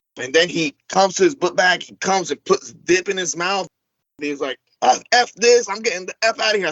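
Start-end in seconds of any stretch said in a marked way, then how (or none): 4.8-6.7 put-on pissed-off angry outburst, pitched up. Retelling how a man stormed off: imitating angry Dan. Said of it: "I know you're pissed off".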